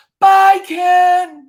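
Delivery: very loud, shrill holler, one word drawn out. Retelling how a security guard called out as they walked out, retelling a loud goodbye shout. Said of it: "really loud".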